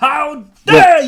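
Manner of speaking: shrill, booming, very high and loud fake indignant scolding. Jokingly scolding a player who missed a compliment: mock outrage. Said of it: "I'm only kidding".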